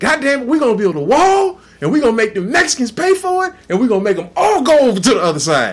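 fired-up rally-style rant, loud, high, big swoops. Retelling how Donald Trump came in, imitating Donald Trump. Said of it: "Donald Trump came in".

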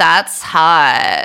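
socialite voice, vocal fry. Showing another speaker the voice she uses: Paris Hilton voice. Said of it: "let me see if I can do it".

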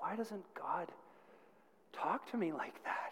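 mock crying, whimpering, tearful words. Retelling a girl asking the youth pastor a question, imitating whimpering. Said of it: "Now she's just whimpering".

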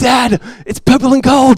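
child's slow, high-pitched attempt at an Australian accent. Retelling the rug game with his three-year-old son: imitating Micah's Australian accent. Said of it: "he'll try with his little accent".

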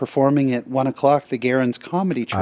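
normal talking voice

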